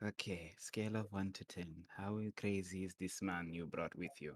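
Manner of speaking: hushed voice. Whispering to a companion about the strange man they brought: whispering. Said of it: "I just whisper to Yosef".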